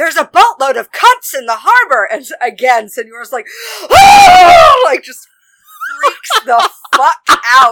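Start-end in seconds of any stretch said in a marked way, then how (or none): 0.0-2.1 sudden, alarmed, bursting-in yell. Retelling a man who runs in, retelling a yell. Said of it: "runs in and yells".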